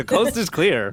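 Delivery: loud, high-pitched shout. Telling the others the coast is clear: yelling in character. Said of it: "I'm just yelling".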